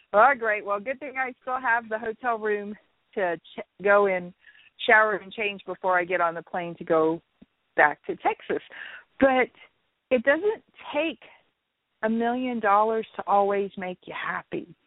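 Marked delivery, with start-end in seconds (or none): none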